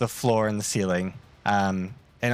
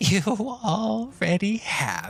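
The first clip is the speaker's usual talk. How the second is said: calm, composed, unhurried, slightly high voice; 10 semitones higher than usual. Voicing an unseen speaker answering the villain's cry: calm voice. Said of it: "you hear a calm voice that says".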